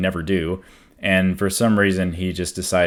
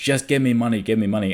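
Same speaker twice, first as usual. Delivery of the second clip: insistent, pushy, half-shouted nagging; 4 semitones higher than usual. Retelling a drunk man's demand for money: imitating someone shouting. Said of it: "getting closer and closer and shouting".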